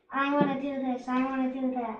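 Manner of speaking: ordinary talk, nothing marked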